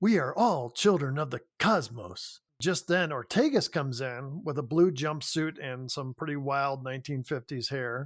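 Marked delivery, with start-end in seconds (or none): 0.0-2.4 put-on, dramatic starship captain voice. Retelling a scene where Kirk does a William Shatner impersonation. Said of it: "he does this whole William Shatner impersonation".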